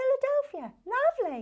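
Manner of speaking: very high, lilting, swooping sing-song advert voice. Retelling how a long-haired blonde girl once said a word: imitating her. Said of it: "she sat there and she just went".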